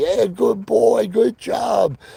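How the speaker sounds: very high, drawn-out cheerful tone. Showing the tone used to praise pal after he listened: happy praising tone. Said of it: "my tone of voice was this happy".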